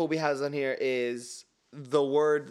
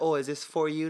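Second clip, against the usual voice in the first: ordinary delivery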